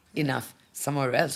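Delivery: normal talking voice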